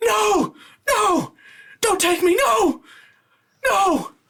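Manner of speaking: frantic, desperate screaming at a very high pitch. Narrating a scene to the players, voicing screams heard from the ruins: desperate screaming plea. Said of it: "you start to hear screams like".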